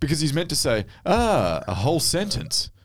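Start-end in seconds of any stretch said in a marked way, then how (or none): 1.0-2.6 very slow, mocking sarcasm, swooping and drawn out. Showing how an actor was meant to say the line: sarcastic delivery.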